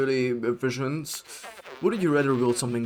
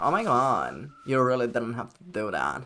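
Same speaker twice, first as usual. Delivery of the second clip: put-on very airy, swooping, sing-song valley girl voice. Speaker showing how a voice in their head sounds: airy Lumpy Space Princess voice. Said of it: "It's like very airy".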